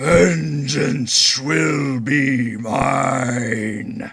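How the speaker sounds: eerie, unearthly otherworldly voice, drawn-out "mine". Game master voicing a grinning figure to the players, otherworldly voice. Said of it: "you hear this otherworldly voice".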